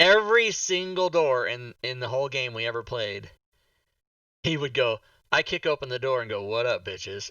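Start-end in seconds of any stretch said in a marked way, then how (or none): 6.4-7.3 mock deadpan, low, flat monotone. Recalling a player who kicked open every door in the game, imitating his flat monotone. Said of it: "he would do it so like so mundane".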